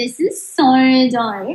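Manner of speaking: put-on Australian accent. Pretending a manager is Australian, the speaker says a line in Australian accent. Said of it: "I can only do an Australian".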